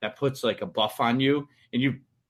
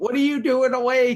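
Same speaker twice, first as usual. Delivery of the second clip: put-on scream, higher and louder; 12 semitones higher, 5 dB louder than usual. Retelling how his wife screamed at their awake toddler: imitating his wife screaming.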